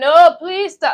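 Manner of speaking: put-on begging, high, tearful, crying. Retelling a movie scene, a woman begging: imitating a crying plea. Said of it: "She was crying".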